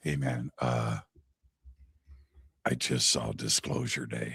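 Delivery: very quiet, low, hushed close whisper. Recalling Dean coming up to him at Contact in the Desert, imitating Dean's whisper. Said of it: "he whispers in my ear".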